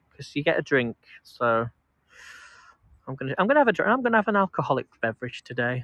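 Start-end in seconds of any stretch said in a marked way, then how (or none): none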